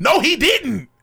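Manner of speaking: very high, shrill, loud yelling. Contradicting the others in a heated group argument, yelling. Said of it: "Why are you yelling at us?".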